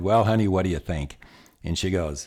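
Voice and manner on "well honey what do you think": plain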